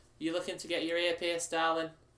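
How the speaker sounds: put-on young teenage shop girl voice, pitched high. In a story game, playing the shop girl greeting customers, in a teenage shop girl voice. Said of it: "a teenage girl".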